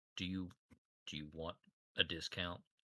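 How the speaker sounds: soft, hushed whisper, in character. Playing a character offering another player a discount: in-character whisper. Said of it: "I kinda whisper towards you".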